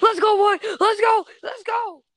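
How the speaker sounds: mock very high, loud, hyped-up excited cheering. Echoing the other person's sudden outburst back at them, imitating an excited freak-out. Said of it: "You went".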